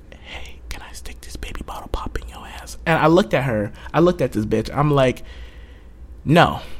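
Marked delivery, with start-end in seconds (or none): 0.1-2.8 very soft, hushed, breathy, predatory, creepy murmur. Retelling what a woman asked the speaker, imitating her softest voice. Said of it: "she says this in the softest pedophile voice ever".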